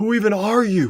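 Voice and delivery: high mock scream, slowly drawn out.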